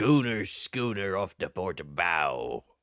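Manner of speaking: very low, hushed, soft pirate voice. Riffing on voices, then asking if it sounds like Mr. Krabs: Mr. Krabs voice. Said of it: "am I doing a bit of a bit of a fucking mister Krabs there?".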